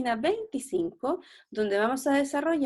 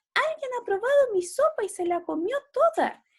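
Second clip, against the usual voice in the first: tiny, very high-pitched little cub voice; 12 semitones higher than usual. A narrator reading a story voices the baby bear, in a tiny baby bear voice. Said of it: "dijo el osito con voz chiquitita".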